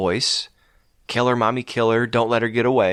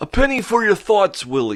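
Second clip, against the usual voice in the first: pitched-up puppet alien voice; 8 semitones higher than usual. A host on a show, slipping into a sitcom character's catchphrase: ALF voice. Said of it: "I sound like Alf tonight".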